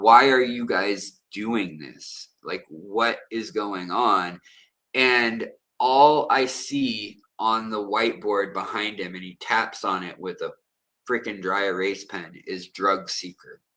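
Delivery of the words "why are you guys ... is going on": mock crying, tearful voice. Retelling a plea to a guard while chained to a bed: imitating his own crying plea. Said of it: "I'm crying to this guy".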